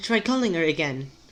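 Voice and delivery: exaggerated British accent. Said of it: "it's sounding too British".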